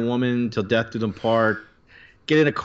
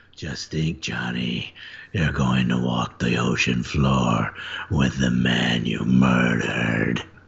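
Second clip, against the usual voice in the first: very low, deep, rough gravelly voice; 12 semitones lower than usual. Reading a comic character's line aloud, in a gravelly voice. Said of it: "I kind of got my gravelly voice back".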